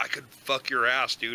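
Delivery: pretend whispering. Acting out a threat whispered in a choked rival's ear: pretend whisper. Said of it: "just whisper in his ear".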